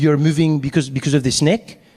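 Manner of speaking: imitated French man's voice. Retelling what the French man next to him asked: imitating the French man. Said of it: "He's like".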